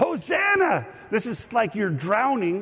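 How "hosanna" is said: very high-pitched cry full of excitement. Leading a crowd to yell Hosanna together: excited shout. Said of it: "You got to say it with excitement".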